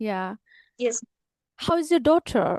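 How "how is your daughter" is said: put-on British English accent. Asked to say a sentence the way they do, the speaker uses a British English accent. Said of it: "Can you say one sentence like them? ... You're so good at that accent".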